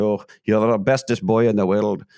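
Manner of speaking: put-on Scottish accent. Recalling what his grandfather told him as a little boy, in Jack's Scottish accent. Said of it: "would tell me with his Scottish accent".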